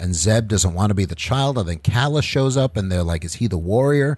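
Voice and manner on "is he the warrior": ordinary talk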